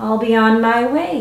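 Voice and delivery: ordinary talk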